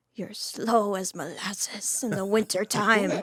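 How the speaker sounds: put-on strict Irish accent. Imitating a strict nun teacher scolding a class: put-on Irish accent. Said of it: "let's hear the accent".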